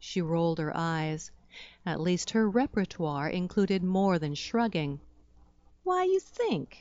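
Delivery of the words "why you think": very high-pitched, patronizing, condescending tone. She answers the narrator's question, in a condescending tone. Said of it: "in a tone that suggested I might be missing a few brain cells".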